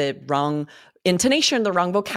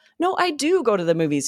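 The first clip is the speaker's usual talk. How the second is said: easygoing, friendly, lightly raised tone; 5 semitones higher than usual. Disagreeing without creating awkwardness, example said with friendly intonation. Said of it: "You have this friendly intonation that really works".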